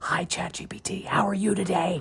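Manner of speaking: sly, whispered voice.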